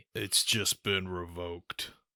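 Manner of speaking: put-on soft, gruff, old action-hero delivery. Asked for a cliche action movie line, doing a gruff aged action-hero voice. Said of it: "your best gruff a- aged action hero impression".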